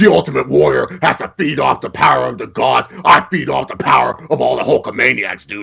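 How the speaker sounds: gritty, creaky wrestling announcer voice. Showing the others the best wrestler impersonation: Hulk Hogan impression. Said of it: "that's my best one".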